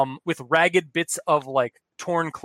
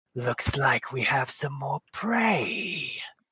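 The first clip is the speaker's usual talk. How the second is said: quieter monster creature voice; 5 dB quieter than usual. Voicing an unseen creature greeting intruders: voicing a spider creature. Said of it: "you hear it's like".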